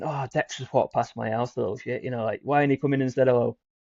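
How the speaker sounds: playful, teasing, jokey grumbling tone. Retelling how the speaker's granddad rang their dad, acting out a joking remark. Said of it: "going like jokingly".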